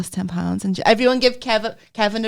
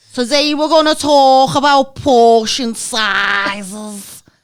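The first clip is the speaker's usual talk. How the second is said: put-on thick Scouse accent, loud and slow; 4 semitones higher, 8 dB louder than usual. Retelling what a meeting leader said: imitating a very strong Scouse accent. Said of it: "she was so Scouse, she sounded Welsh".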